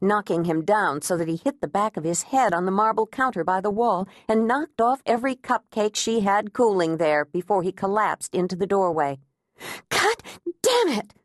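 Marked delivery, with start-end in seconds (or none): 9.9-11.0 panting, breathless, very high-pitched outburst. A woman standing over a fallen man, holding her pan, breathless. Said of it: "Agnes said breathlessly".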